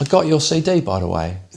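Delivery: put-on London-sounding accent. Act out a guest on the talk show replying to the host, in [name]'s London-sounding accent. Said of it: "Was that a London accent then?".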